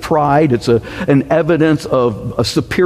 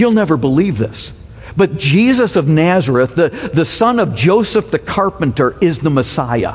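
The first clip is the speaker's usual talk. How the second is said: normal talking voice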